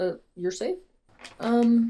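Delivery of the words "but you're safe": ordinary delivery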